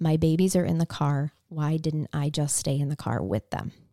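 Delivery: ordinary delivery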